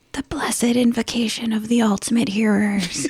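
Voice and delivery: whispered possum creature voice. Voicing a possum that comes up to someone with a bottle, in a possum whisper. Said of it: "the possum whispers to you".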